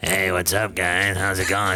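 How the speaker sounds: rough, smoke-worn barfly rasp. Retelling a beer-drinking woman greeting the group, in a raspy smoker voice. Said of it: "Comes over with this raspy smoker voice".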